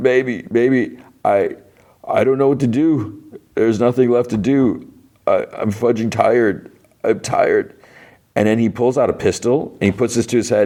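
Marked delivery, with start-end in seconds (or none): 0.0-7.7 high, slow, broken-down sobbing speech.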